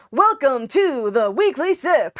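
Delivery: put-on announcer delivery. Showing Dev how to say the welcome in an announcer voice. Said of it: "You gotta get yourself an announcer voice".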